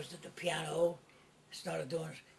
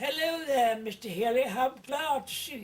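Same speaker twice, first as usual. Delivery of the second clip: put-on high, raised voice with English accent; 7 semitones higher, 7 dB louder than usual. Retelling a visitor greeting Mister Healy, doing Bagtweed's English accent. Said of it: "he comes with an English accent".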